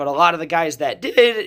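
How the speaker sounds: voice breaking badly mid-phrase. Discussing wrestlers who went to WCW, the speaker's voice gives way: voice cracking. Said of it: "my voice cracked there, bad".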